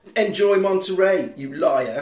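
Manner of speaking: ordinary talk, nothing marked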